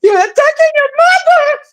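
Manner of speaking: very high, put-on, weepy fake sobbing. Talking to Danny, the speaker puts on mock crying like Lady Latisha. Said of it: "start crying like Lady Latisha and say".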